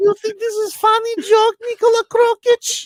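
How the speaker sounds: put-on grandmother voice. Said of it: "Babushka puppy".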